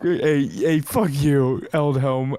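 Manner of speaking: very slow, deliberate, drawn-out yell. Playing a character making a scene at Eldhelm: yelling in character. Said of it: "I'm gonna start yelling and making a scene".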